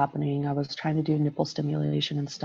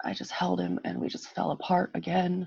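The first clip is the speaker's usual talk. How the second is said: ordinary talk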